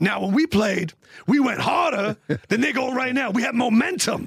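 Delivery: pulpit-style, preacher-like speechifying voice. Imitating a former player talking about the team: Ray Lewis voice. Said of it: "That's the Ray Lewis voice?".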